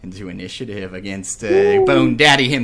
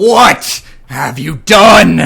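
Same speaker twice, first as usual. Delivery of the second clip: very loud, resounding, booming cry; 7 semitones higher, 10 dB louder than usual. Narrator voicing a skeletal figure's first words, in a booming voice. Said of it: "you hear a booming voice through the room".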